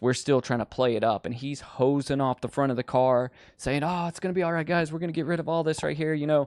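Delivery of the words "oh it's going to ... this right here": high, rushed, frantic and panicky delivery. Retelling a friend hosing off the car: imitating a friend freaking out. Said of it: "he's freaking out with us".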